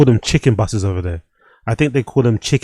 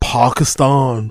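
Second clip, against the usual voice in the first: mock, exaggerated, affected native pronunciation. Mocking how another speaker pronounces a country name: mimicking an affected native pronunciation. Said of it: "Why does he say Pakistan like that?".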